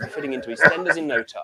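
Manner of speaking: usual speaking voice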